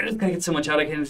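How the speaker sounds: fast pressured speech. Explaining a mental status exam term, demonstrating fast pressured speech. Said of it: "talking so fast as if it's like being pushed out".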